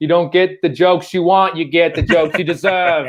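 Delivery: put-on heavy, laid-on old-school Boston accent. A comedian retells addressing the crowd during a rough set, in a Kennedy accent. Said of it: "I do a Kennedy accent".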